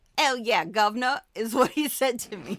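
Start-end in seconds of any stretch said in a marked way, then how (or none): 0.2-1.2 full, put-on Cockney accent. Retelling what a man said to the speaker: Cockney-accent Hugh Grant impression. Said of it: "I love the Cockney accent".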